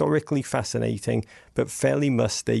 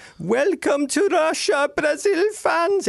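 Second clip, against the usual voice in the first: very high, stretched, drawn-out loudspeaker scream; 4 dB louder than usual. Retelling announcements from loudspeakers at the games: imitating a loudspeaker screaming. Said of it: "loudspeakers just screaming".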